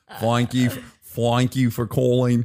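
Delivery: put-on Australian with Southern twang. Imitating a pizza shop phone message: put-on Australian accent. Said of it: "a Southerner that spent too much time in Melbourne".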